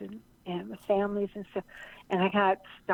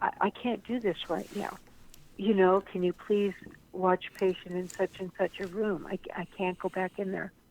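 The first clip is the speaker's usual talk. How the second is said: distressed, really upset, overwhelmed pleading voice. Acting out asking someone to watch a patient, imitating being really upset. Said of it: "If you're really, really upset".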